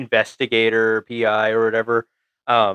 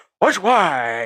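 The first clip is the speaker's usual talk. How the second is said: high-pitched, bursting with over-eager enthusiasm; 7 semitones higher than usual. Recounting a scene where a man gets hit by a car and gets up: mock super-enthusiastic. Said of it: "super enthusiastic".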